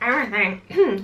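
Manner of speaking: voice cracking and breaking on every word. Showing what fits in the bag, repeating the last word: voice cracking. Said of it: "Voice crack".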